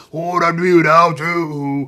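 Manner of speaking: deliberate rasping drawl. Mocking how girls with raspy voices talk: imitating a raspy voice. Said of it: "So you be talking like".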